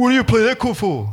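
put-on Adelaide Italian accent. Imitating the man who criticises the speaker's chords, in an Adelaide Italian accent. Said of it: "I gave him an Adelaide Italian accent".

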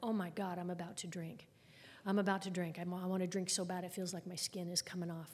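ordinary delivery

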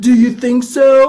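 dumb, loud voice. Quoting Neil's rejoinder in the diner scene, in a stupid voice. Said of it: "In a stupid voice".

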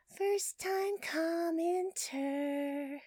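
floaty, airy, ethereal tone, very high. Reading out listener comments on a show, in an airy, ethereal voice. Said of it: "I decided to go ethereal with that one".

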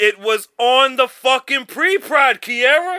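very loud, high, full-volume yelling. Arguing with podcast co-hosts about a recorded pre-show, yelling. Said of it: "Why is he yelling at me?".

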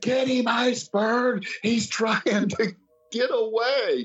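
play-acted very high, frantic, freaked-out screaming. Retelling a wrestling match where he freaked out: imitating his own screaming. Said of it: "I'm freaking out, screaming".

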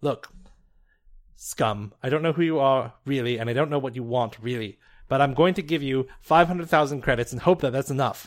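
loud, contemptuous, menacing tone.

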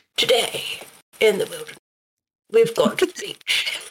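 put-on wildlife documentary narrator voice. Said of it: "Atterbury voice".

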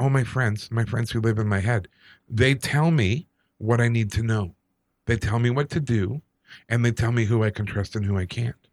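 normal talking voice

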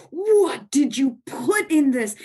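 mock yelling, slow and drawn-out. Retelling a son's reaction to a pot pie at dinner: imitating a yell. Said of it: "and he yells".

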